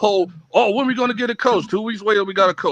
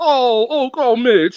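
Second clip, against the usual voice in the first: mocking, put-on sentimental mourning, getting louder; 4 dB louder than usual. Mocking an emotional fan reaction: put-on sentimental mourning. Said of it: "I'm not one of those".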